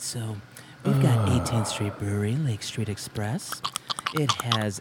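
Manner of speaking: seductive, sensual, breathy near-whisper. Asked to describe a beer can's ingredients in a very sensual voice. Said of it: "in a very sensual voice".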